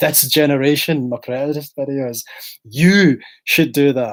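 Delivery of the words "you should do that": heavy stress on the word you. Showing how to emphasize a single word: stressed you. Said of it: "let me emphasize the word 'you.'".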